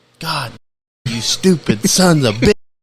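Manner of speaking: high, raging, angry holler. Retelling a man yelling at his crew, retelling him yelling. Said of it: "he's yelling at him".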